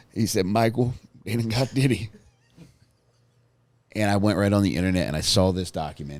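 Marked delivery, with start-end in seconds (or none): 0.4-2.1 mock tearful, sobbing, words barely coming out. Retelling a late-night call from a caller, imitating Jake crying. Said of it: "he could barely get the words out".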